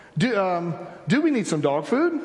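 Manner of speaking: English accent. Demonstrating a habit of asking everyday questions: English accent question. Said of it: "I will ask questions with an English accent".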